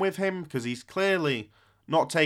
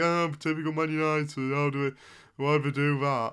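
scoffing, mocking, derisive jeer. Retelling how people responded to the exit interview: imitating people mocking. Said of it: "sort of mockingly and going".

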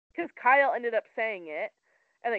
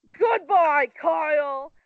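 put-on old British gentleman voice, high and very loud; 5 semitones higher, 8 dB louder than usual. Retelling how Ken and his wife threw a woman out, the speaker does a Ken impression. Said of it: "said you sounded just like him".

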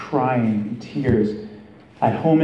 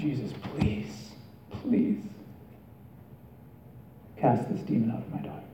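mock hushed whisper, crying and tearful; 11 dB quieter than usual. Telling the story of a woman kneeling before jesus for her daughter, retelling a tearful plea. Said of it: "she's begging him, she's crying".

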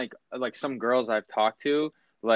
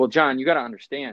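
ordinary delivery

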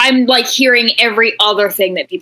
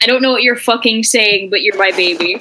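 ordinary talk

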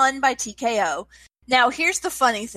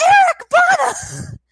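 high, loud, slow, excited scream. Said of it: "why [name] was screaming".

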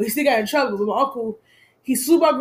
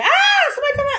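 mock piercing, shrill, very high shriek. Retelling a break-in at home: imitating own past scream. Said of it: "I screamed".

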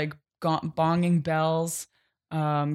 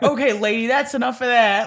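slight put-on New Jersey accent, raised and pitched up; 6 semitones higher, 5 dB louder than usual. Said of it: "a little bit of that kinda accent".

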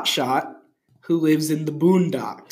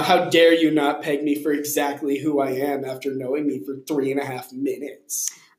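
normal talking voice

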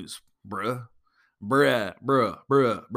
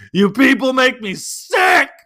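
very high-pitched, very loud, shrill yell; 13 semitones higher, 10 dB louder than usual. Retelling yelling at people lined up for Santa's village: imitating own yell. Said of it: "I yelled out".

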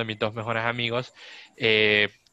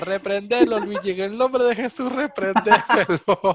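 high, loud yelling at full voice; 10 semitones higher, 6 dB louder than usual. Retelling how a friend urged a rebuke from below: imitating a friend shouting. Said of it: "mi amigo solo gritaba".

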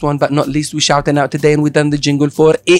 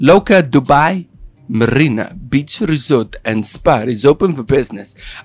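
slow, muddled put-on mixed accent, slightly American. On an accent day, announcing that a resort is open in a confusing put-on accent. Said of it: "I don't know what accent I put on right there".

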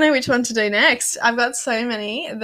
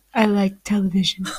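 scary, creepy, menacing voice; 3 semitones lower than usual. Imitating someone staring at the TV in a Jeffrey Dahmer voice. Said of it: "your Jeffrey Dahmer voice?".

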